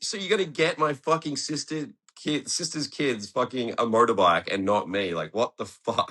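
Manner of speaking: high, furious, outraged cursing outburst. Retelling finding a motorbike at parents' house: retelling own angry outburst. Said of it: "I was so mad".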